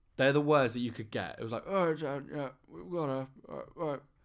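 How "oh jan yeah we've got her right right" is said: put-on higher, mumbling old man grumble. Retelling the words on a creepy voicemail, imitating an old man grumble. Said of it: "typical old man kind of grumble".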